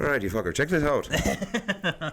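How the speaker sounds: thick Irish brogue. Retelling what the Irish bartender said to the speaker: imitating Peter's Irish accent. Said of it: "Very Irish".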